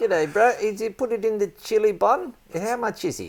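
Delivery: very high, loud put-on New Zealand accent. Playing a buyer in a mock sales skit: New Zealand accent. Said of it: "that's my New Zealand".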